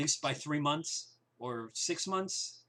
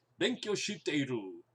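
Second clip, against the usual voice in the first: clumsy, bad learner's Japanese accent. A learner of japanese says a japanese phrase in a bad accent. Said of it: "There's my bad accent".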